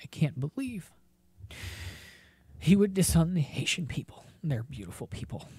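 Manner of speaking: mock weepy, tearful crying voice. Imitating a man who was crying on TV: mock-tearful, as if crying. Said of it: "He was crying, so it's not how he sounds normally".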